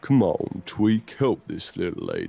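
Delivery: very deep, low, confident frog voice. The speaker voices what is heard in the palm, in a deep frog voice. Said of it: "Deep frog".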